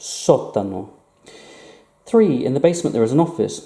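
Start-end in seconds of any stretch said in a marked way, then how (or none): 0.0-0.9 first syllable só stressed in sótano. Spanish lesson on accent marks: stress on só in sótano. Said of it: "We are putting emphasis on the letter O here".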